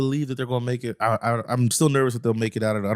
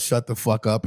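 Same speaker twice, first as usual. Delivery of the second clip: plain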